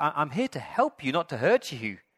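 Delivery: exasperated, fed-up, frustrated voice. Retelling how the dad, failing to help a bird, speaks: imitating a frustrated dad. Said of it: "gets really frustrated and says".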